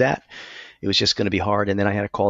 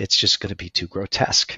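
broken, cracking voice. Retelling what the doctor said, imitating a broken voice. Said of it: "in sort of a, a broken voice".

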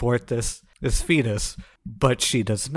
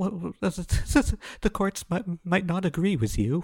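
high, stuttering, stammering, terrified whimpering; 7 semitones higher, 3 dB quieter than usual. Mocking a woman reading from cue cards, in a mock stammering whimper. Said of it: "She is stammering. She is whimpering".

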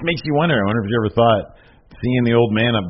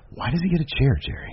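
mock under-breath mutter, much quieter; 3 semitones higher, 6 dB quieter than usual. Quoting what a man said about a chair to the other host, retelling a mutter under breath. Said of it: "you can hear him under his breath say".

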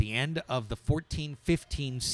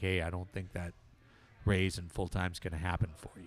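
low voice, hushed and kept down; 4 semitones lower, 6 dB quieter than usual. Retelling how the GM turned down a raise at a handshake: imitating John's low voice. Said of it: "and in a low voice, he was like".

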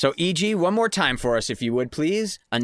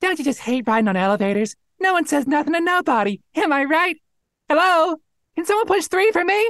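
put-on tiny cute five-year-old coach voice, higher and louder; 13 semitones higher, 5 dB louder than usual. Performing a line as a tiny five-year-old flower who coaches athletics: tiny cute coach voice. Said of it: "You are a tiny flower that is five years old".

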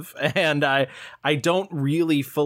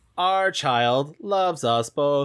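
stilted fake British accent, pausing between words. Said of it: "occasionally fake British accent and pausing between words".

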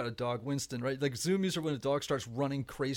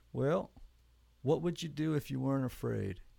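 put-on calm voice, Arkansas accent. Recalling a man's question on a phone call, imitating a calm Arkansas accent. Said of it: "very, very calm, very, very, Arkansas accent".

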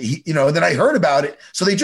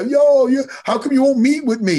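put-on tearful, very high sobbing, crying voice; 9 semitones higher than usual. Retelling a clip of Diego asking Dana for a meeting: imitating Diego crying. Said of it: "literally crying".

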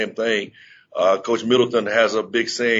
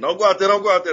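acted-out shrill shout, pitched way up, repeated screaming; 9 semitones higher than usual. Retelling yelling at a player from the sideline: retelling own screaming. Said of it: "I start screaming".

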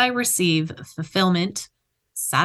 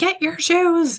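put-on very high, harried, frazzled yelling; 11 semitones higher, 3 dB louder than usual. A parent recalls rushing her kids out early one morning: retelling her own yelling. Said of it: "I'm yelling at them".

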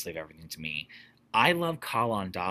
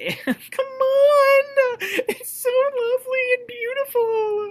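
exaggerated fake sobbing, very high and loud; 10 dB louder than usual. Recalling the moment at the end of Act One between Dolly and Irene: fake crying voice. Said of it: "that's my fake crying voice".

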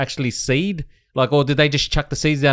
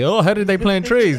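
snarky, mocking, sarcastic, pitched-up delivery; 5 semitones higher than usual. Retelling an own earlier question to the group: retelling own sarcastic remark. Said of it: "I said it thinking sarcastically".

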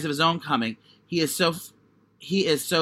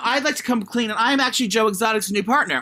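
ordinary talk, nothing marked

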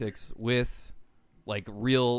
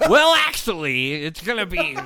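very loud, shrill, swooping, mocking know-it-all nerd voice; 6 semitones higher, 9 dB louder than usual. Griping about a Twitter nitpicker, a speaker mocks him in a nerd voice. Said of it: "I stole that nerd".

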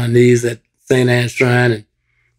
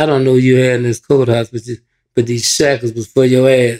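ordinary talk, nothing marked

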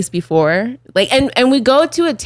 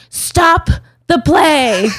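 high, loud, full-lunged acted-out screaming; 7 semitones higher, 3 dB louder than usual. Retelling how a man interrupted a play: imitating someone screaming. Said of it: "he screams at the top of the lu-, his lungs".

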